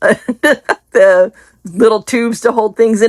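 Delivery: very slow, words coming through giggles. Showing off bargain craft supplies, still giggling at themselves: giggling while talking. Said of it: "I'm still giggling at myself".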